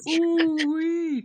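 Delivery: very high, loud, squeaky cartoon voice. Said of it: "character that goes like".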